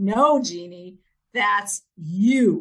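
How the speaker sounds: very loud, very slow, emphatic, stretched you. Retelling a friend getting in the speaker's face: imitating a friend saying it loudly. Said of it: "says really loudly".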